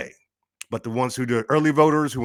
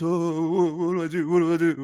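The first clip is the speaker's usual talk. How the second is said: mock little, high, quavering, frightened voice; 6 semitones higher than usual. Mocking an official who could not finish his statement: imitating a shaky scared voice. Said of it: "You see with his little shaky voice".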